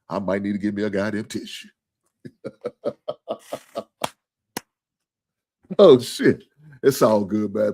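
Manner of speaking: all choked up, emotional. Blaming his brother Trucker for getting him in his feelings, speaking choked up. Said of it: "I'm all choked up now".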